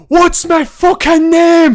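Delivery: shrill scream, very loud and high. Describing a movie battle scene, acting out a character, retelling a scream. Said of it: "the guy like screams at him".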